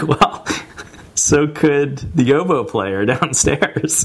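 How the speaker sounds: slow delivery broken up by laughter.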